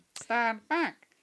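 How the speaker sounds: voice pushed way up, really high-pitched. Chatting about the films, quoting a character in a really high-pitched Griphook voice. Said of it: "Like really high pitched".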